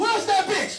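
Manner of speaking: loud, insistent yelling.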